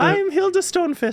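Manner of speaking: high, female, put-on Scottish accent. Introducing their game character by name, in Hilda Stonefist voice. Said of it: "a female Scottish accent".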